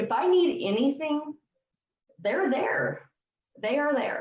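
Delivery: choked-up, high, breaking voice. Speaker in a conversation, getting choked up. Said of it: "sorry, I'm getting choked up".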